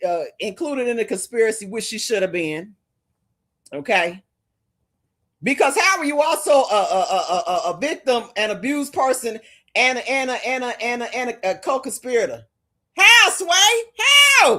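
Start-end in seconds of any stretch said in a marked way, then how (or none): 5.4-14.6 loud, heated, passionate, swooping rant. Arguing a legal point with rising frustration: loud and passionate. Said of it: "And I know I'm loud".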